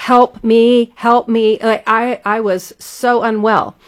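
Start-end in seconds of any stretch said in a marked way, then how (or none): 0.0-1.6 desperate, all-out screaming for dear life. Retelling screaming on a fast ride: imitating own screaming for life. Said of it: "I was screaming, like, for my life".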